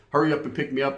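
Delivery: ordinary delivery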